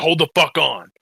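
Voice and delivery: mock freaking out. Recalling watching an episode with friends, acting out the moment: retelling a freak-out. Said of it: "I freaked out in the middle of it".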